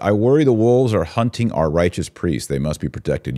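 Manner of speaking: plain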